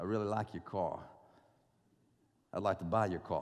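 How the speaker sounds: put-on heavy, thick New York accent, low voice. Retelling a guy who called wanting to buy his car, thick New York accent. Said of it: "this guy with a thick New York accent".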